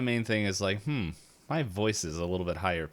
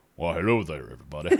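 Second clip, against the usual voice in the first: deep reverberating voice, lower and faster; 4 semitones lower, 3 dB louder than usual. Speaker demonstrates how their voice sounds in their own head, imagined deep voice. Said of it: "mind reverberations".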